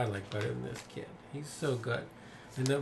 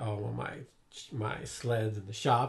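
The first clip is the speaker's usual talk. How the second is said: slow, dry, mocking, sarcastic dismissive tone. Retelling a movie scene, the speaker answers the kid's question, mock-sarcastic reply as Willie. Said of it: "Willie will sarcastically say".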